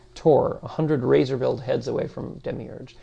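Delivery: ordinary delivery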